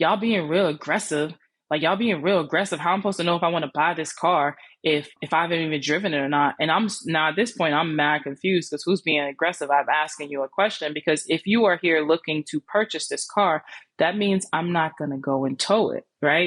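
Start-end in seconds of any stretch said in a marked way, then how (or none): none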